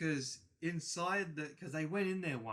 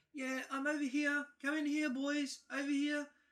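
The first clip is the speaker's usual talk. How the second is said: put-on little old lady voice, very high, calling out; 11 semitones higher than usual. Retelling what their dad heard inside a rundown shack, in an old lady voice. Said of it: "a voice of an old lady saying".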